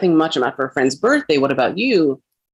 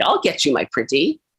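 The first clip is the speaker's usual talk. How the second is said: storybook wicked witch voice; 2 semitones lower than usual. Joking about an aunt's all-caps text, the speaker quotes in a Wicked Witch of the West voice. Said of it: "She sounds like the Wicked Witch of the West".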